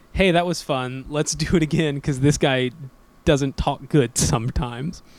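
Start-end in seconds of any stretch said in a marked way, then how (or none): none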